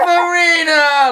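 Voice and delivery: put-on big Italian grandma voice, very high, drawn out. Acting out God greeting a guest at heaven's gates: big Italian grandma voice. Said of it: "like a big Italian grandma".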